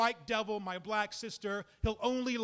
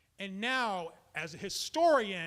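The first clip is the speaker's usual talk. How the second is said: normal talking voice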